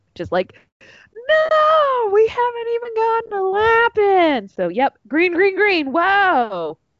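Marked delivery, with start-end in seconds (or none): 1.2-4.4 mock very high screaming wail, long drawn-out no. Retelling a reaction while watching the race on TV: imitating own screaming. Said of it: "I was just already screaming".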